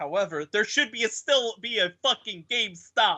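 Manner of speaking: put-on Italian accent. Joking that there should still be a gamestop: put-on italian accent. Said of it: "Why did you have an Italian accent for that?".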